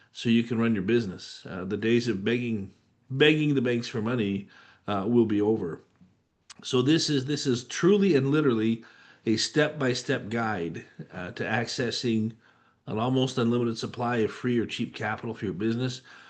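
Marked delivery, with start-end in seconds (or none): none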